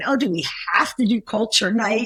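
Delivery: ordinary talk, nothing marked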